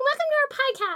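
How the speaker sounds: very high, squeaky little chipmunk voice. Retelling a radio show made when little, the speaker redoes its intro in a put-on chipmunk voice. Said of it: "me as like a chipmunk voice".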